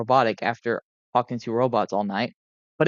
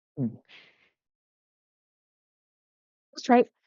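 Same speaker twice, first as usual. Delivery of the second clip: put-on childlike voice, very high pitch; 10 semitones higher, 3 dB quieter than usual. Starting a real recording, the speaker's voice comes out wrong: sounding like a kid. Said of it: "I sound like a fucking kid instead".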